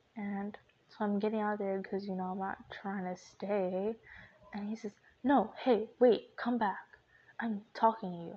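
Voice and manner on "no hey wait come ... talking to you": mock, loud, pissed-off, demanding angry shout. Retelling how dad yelled at them: imitating dad yelling. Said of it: "he was just yelling at me".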